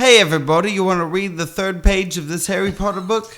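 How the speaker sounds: mock New Zealand accent. After a joke about Australian phrases, showing how New Zealanders talk, mock New Zealand accent. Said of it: "New Zealand is more like".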